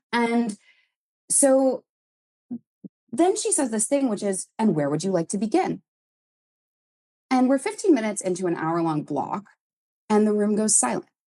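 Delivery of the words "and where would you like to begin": put-on gentle robotic voice. Retelling what the director asked the group: imitating a gentle robot voice. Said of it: "she's speaking like she's kind of like a gentle robot".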